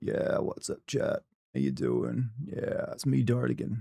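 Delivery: breathy, creaky vocal fry. Showing what a chat greeting would sound like, creaky vocal fry. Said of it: "Vocal Fry would be more like".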